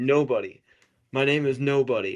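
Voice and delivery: slow, easy, drawn-out called-out voice. Retelling how the hero yells his name at the blinded giant: retelling a yell. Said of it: "He yells".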